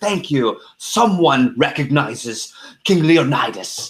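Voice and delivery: put-on British accent. Retelling what a man staying in character said in the elevator, King Leonidas in British accent. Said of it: "in character with an accent says".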